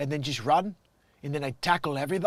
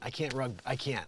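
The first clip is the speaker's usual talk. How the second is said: ordinary talk, nothing marked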